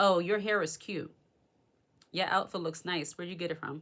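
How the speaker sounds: mock insincere, backhanded tone with audible envy. Showing how an envious woman gives a compliment: imitating an envious woman's compliment. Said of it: "But she's not gonna say it like that".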